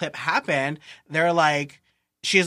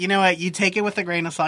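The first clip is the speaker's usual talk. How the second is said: ordinary delivery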